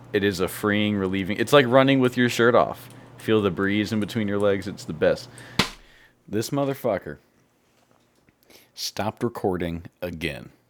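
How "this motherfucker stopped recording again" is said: soft, deflated, disappointed voice, dropped. Podcaster finding the recording has stopped again, disappointed. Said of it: "Can you hear the disappointment in my voice?".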